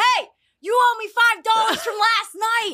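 mock shouting. Telling how the shuttle bus driver called out to him, retelling a yell. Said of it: "yells out".

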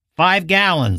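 hard, firm, harsh, high-pitched and curt. Reading a story, a man answering the girl in the car, harshly. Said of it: "the man said harshly".

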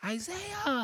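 shrill, slow, screaming broken English.

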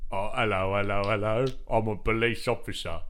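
put-on police-officer puppet voice. Retelling a man's act with a puppet on his arm, doing the police-officer puppet voice. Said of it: "Do the voice. You know the voice".

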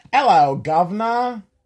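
very loud, high-pitched, badly done fake British accent. Taking turns at British accent lines, in a bad British accent. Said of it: "British, I struggle".

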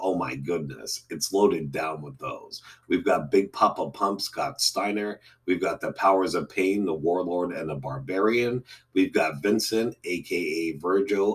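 ordinary talk, nothing marked

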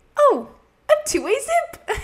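very high, slow, drawn-out comic delivery. Recall a line of hers that randomly pops into your head, imitating her hilarious delivery.

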